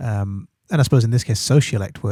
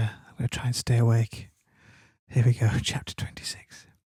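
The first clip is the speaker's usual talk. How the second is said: speaking in a whisper, quieter; 5 dB quieter than usual. Recording late at night and starting the chapter: whispering. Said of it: "I'm just gonna whisper".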